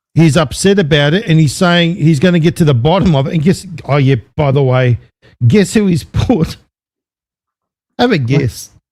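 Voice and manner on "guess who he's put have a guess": talking through laughter. Asking the other speaker to guess who was appointed: laughing while talking. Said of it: "I've gotta laugh".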